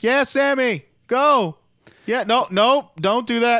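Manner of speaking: very high, loud, very slow drawn-out hollering calls. Describing how a wrestling commentator talks on the mic, imitate Chris Jericho as a soccer parent. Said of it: "talks like he's a parent in their kid's soccer game".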